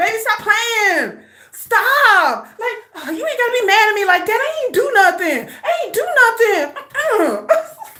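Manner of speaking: smooth, pleading, coaxing sweet-talk with drawn-out words. Retelling how Sugar talks his way out of trouble, imitating Sugar sweet-talking. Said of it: "He be like".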